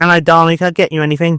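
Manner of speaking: put-on Essex accent, quick and chatty patter. Voicing a woman with a drinks trolley greeting Bard, in Essex accent. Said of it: "She's from Essex".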